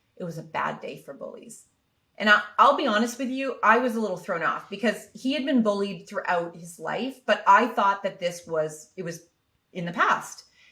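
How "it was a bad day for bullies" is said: low, flat, deadpan monotone, acted. A parent retelling how his son answered a question about school, in a flat monotone. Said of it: "totally monotone".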